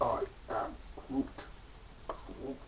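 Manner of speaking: slow, very quiet, barely audible near-whisper. Showing another speaker an impression: Groot voice. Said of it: "I'm good at Groot".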